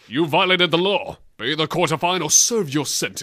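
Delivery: mock irate, angry law enforcer voice. Describing a video game's guards, the speaker does them: imitating angry Imperial Guard. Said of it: "and if they're angry, they go".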